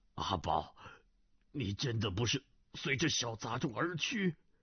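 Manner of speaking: trembling, quavering voice. Narrator reads a man's line after he snatches the sword away: trembling voice. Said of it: "颤声道".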